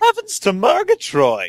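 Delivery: very high cartoon voice with swooping pitch. Answering that the last bit sounded like Snagglepuss: Snagglepuss voice. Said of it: "I thought I sounded more like Snagglepuss".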